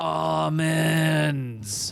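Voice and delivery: high, loud, long, stretched-out yell. Retelling how a lady grabbed at a friend: imitating someone yelling. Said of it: "and she yelled".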